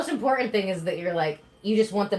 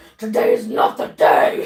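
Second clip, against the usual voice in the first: loud, mad, boiling-over furious voice; 6 dB louder than usual. Retelling scolding a misbehaving dog, imitating own angry voice. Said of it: "But I was so mad".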